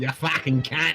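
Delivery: put-on Aussie twang. Joking about moving to Australia, a speaker says the phrase with an Aussie twang. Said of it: "You gotta put that Aussie twang to it".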